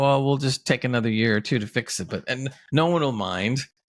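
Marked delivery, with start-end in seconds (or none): none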